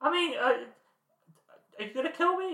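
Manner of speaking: high-pitched voice. Acting a scene, questioning another speaker, in a high-pitched voice. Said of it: "If you keep talking in that high-pitched voice".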